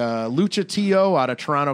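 ordinary talk

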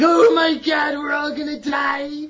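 put-on scream. Recalling shaking the camera in a movie-review reenactment, reenacting a scream.

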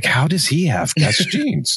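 stage whisper, gossipy tone. Recalling people whispering about his jeans: imitating people whispering. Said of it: "Like whispering".

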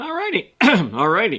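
voice crack. A show host wrapping up a Social Security segment, voice cracking. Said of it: "Lost my voice there for a second".

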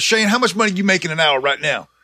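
put-on accusing voice. Retelling what his manager asked him at work, retelling an accusing question. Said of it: "he said it like accusingly".

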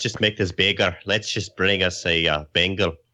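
put-on Scottish accent. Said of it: "Why have we all gone, like, Scottish all of a sudden?".

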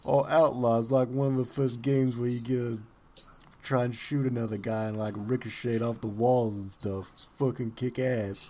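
put-on loud, super thick New York accent. Describing an online game reviewer, the speaker mimics him in a super thick new york accent. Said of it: "a super thick, like, New York accent".

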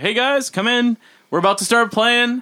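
mock, high, hollering yell. Retelling how you yelled at the bar just before your band went on. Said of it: "so I started like yelling at the bar".

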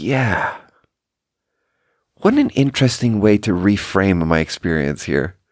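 imitated wistful voice. Retelling own reply in a conversation: retelling a wistful reply. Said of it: "I sort of wistfully look out over the horizon".

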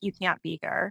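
curt, cold voice. Retelling what the front desk person at the high school said: imitating a cold reply. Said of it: "just so cold".

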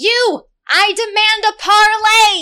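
very high-pitched, loud shouting. Leaning over the ship's bow toward the one with the largest trident, shouting a demand. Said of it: "and shout at the one".

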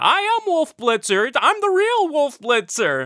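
put-on very high, swooping, drawn-out scream. Acting out a wrestling-style character in the arena: screaming in an arena. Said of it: "he's screaming in the arena".

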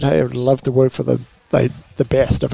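ordinary talk, nothing marked

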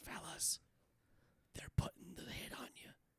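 put-on whisper. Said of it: "I was whispering for some reason".

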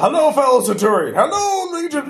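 grand theatrical voice, very high, swooping pitch. Voicing a centurion greeting another centurion: dramatic centurion speech. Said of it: "Perfecticus has a very dramatic speech".

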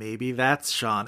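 slow, soft, dry, cutting, mocking delivery.

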